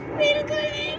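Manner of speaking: high, firm, dismissive, tossed-off tone.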